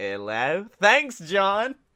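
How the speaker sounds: Australian-accented speech. Asked to do the Australian accent while imagining a hangout with John: Australian accent. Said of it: "Do the Australian accent".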